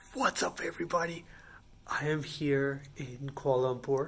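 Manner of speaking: very quiet, hushed whisper. Past midnight in a hotel hallway, not wanting to wake the neighbors, whispering. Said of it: "the reason I'm whispering".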